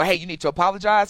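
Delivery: normal talking voice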